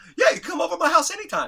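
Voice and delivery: squeaky voice, very high and very loud. Retelling your friend's zinger in reply to Gene's speech, imitating Tommy's high voice. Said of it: "he had this high voice".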